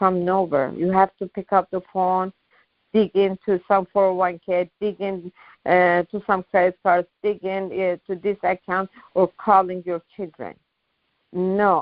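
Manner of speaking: ordinary talk, nothing marked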